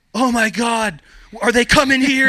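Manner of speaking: shrieking scream, very loud, very high pitch. Retelling how Sarah reacted when he jumped off the couch: imitating Sarah screaming.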